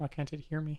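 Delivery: hushed, very quiet, soft, high asmr murmur. Testing a microphone after being told to talk louder, soft asmr voice. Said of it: "What's with the A S M R voice?".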